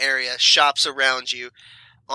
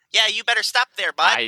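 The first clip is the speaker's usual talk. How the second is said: put-on thickest Midwestern accent, much higher; 7 semitones higher than usual. Playing a character, thickest Midwestern accent. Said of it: "Thickest Midwestern accent you can imagine".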